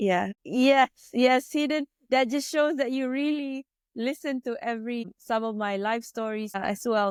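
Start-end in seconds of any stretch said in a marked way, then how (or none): 0.0-5.1 high, choked-up tearful voice. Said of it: "I think literally tears are coming out".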